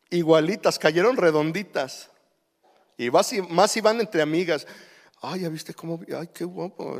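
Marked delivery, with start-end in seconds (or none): 5.2-7.0 muttered through teeth, much quieter. Speaker imitates women watching a young man pass, muttering through their teeth. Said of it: "Así hablan así como entre dientes".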